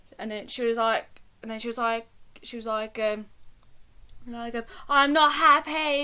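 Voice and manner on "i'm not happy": put-on scream, higher. Retelling a phone call from an angry woman: imitating someone screaming. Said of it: "She was screaming at me down the phone".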